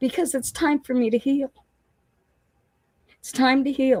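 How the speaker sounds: near tears, tearful, very high voice. Retelling a conversation about staying in sober living, about to cry. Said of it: "I'm going to cry again".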